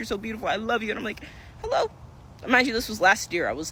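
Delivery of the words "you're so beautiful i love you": crying, tender, loving gush. Retelling a woman who cried at her, the speaker is imitating someone crying. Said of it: "She's crying at me".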